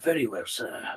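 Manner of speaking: put-on soft, calm, unhurried old man voice. Voicing a nice, calm old man greeting Milo at the door: calm old man voice. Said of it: "Nice, calm, old man".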